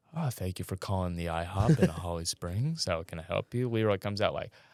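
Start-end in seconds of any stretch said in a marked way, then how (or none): 0.1-3.7 polite, practiced customer-service phone voice. Describing everyone answering the IHOP phone, the speaker does a practiced phone voice. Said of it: "I'm practicing my phone voice".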